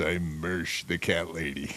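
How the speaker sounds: very deep radio announcer voice. Imitating the cat lady being discussed: very deep radio voice. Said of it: "very deep radio voice".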